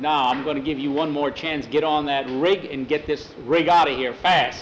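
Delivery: ordinary delivery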